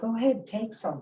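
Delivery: put-on gentle kindness. Retelling a tall being offering berries to a hungry child: imitating a kind, gentle voice. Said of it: "Really kind, gentle voice to him".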